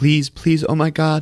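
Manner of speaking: play-acted crying through sobs, high and tearful. Retelling a film scene where she hands him the book: imitating crying plea. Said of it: "sitting there crying".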